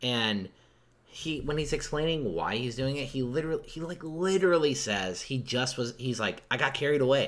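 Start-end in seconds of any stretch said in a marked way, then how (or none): 6.5-7.3 weird, over-the-top twang. Retelling how an over-the-top actor explains his motive: imitating Bill's weird twang. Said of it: "weird twang".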